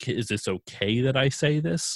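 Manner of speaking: high, timid, anxious and hesitant tone. Retelling how an anxious podcast guest spoke: imitating an anxious, questioning guest. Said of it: "almost asking".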